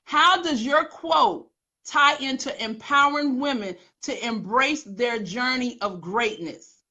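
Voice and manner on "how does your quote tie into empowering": usual speaking voice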